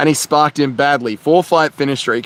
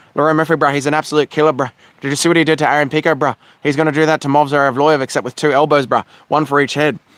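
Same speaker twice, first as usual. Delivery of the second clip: normal talking voice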